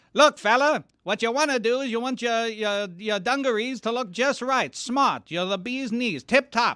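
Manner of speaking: put-on old-timey mid-century accent, very high pitch. Showing off an accent from an earlier era: put-on mid-century accent. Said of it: "I can do mid-century".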